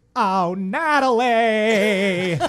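booming, very loud, belted call with name drawn out. The others have just asked to hear the impression, so perform it, Mrs. Garrett impression. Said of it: "Let's hear it".

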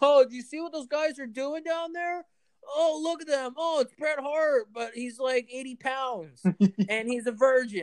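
very high, shrieking, screaming crowd voice. Retelling what fans nearby at a wrestling show said: imitating people screaming. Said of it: "I hear people next to me screaming".

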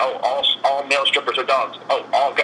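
normal talking voice

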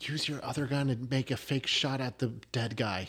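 very quiet, low, hushed aside. Player in a role-play game speaking aside to another player: quiet aside. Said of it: "I quietly say to you".

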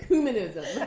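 heavy stress on cu in ecumenism. Told to emphasize the ooh, says ecumenism with stress on 'cu' in ecumenism. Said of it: "put the emphasis on the ooh. And so I really like go for it now".

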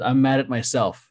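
ordinary talk

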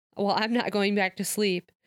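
ordinary delivery

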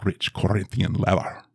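put-on accent heard as Russian. Recalling the car she traded for, quoting the ad: Ricardo Montalban impression. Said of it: "Why did you go Russian?".

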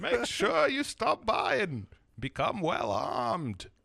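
slow, drawn-out, loud, swooping sing-song character voice. Doing an impression for the other speaker who asked to hear it: Deckard Cain voice. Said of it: "that is pretty good".

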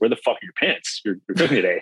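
put-on gruff man voice. Retelling a man in a restaurant kitchen greeting a 13-year-old in shorts, imitating a gruff man. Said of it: "he's kind of a gruff dude".

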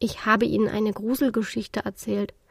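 ordinary delivery

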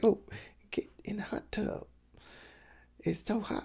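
breathed out, half whispered. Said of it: "[name]'s impression of [name]".

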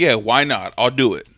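ordinary talk

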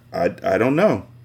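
plain

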